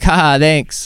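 fake laughing. Retelling a forced reply to a joke: fake laughing. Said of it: "I had to fake laugh".

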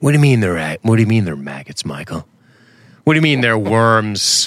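put-on deep movie voice. Raving about a movie, the speaker quotes Kiefer's line in that deep voice. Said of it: "That deep voice".

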